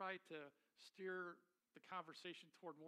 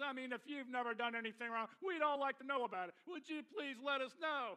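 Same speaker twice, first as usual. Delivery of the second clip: top-of-the-lungs, very loud, high preacher's shout; 8 semitones higher, 12 dB louder than usual. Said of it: "shouting at the top of his lungs".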